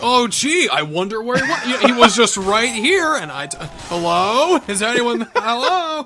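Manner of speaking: mock-sarcastic tone. Speaker acts out how he blatantly ignores someone, in a mock-sarcastic retelling. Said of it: "you're like doing it really sarcastic".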